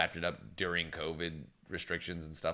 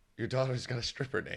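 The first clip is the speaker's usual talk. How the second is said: put-on pitched-up lovely British accent; 5 semitones higher than usual. Quoting Lucifer's joke about a daughter's name: Lucifer's British accent. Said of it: "he said it with a lovely British accent".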